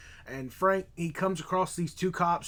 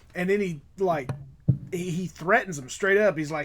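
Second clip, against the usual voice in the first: ordinary talk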